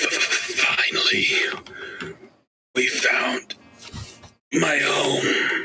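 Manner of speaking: high, scratchy, rasping voice. Narrating a game, voicing what the players hear in their heads, raspy voice. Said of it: "you hear a raspy voice in your head".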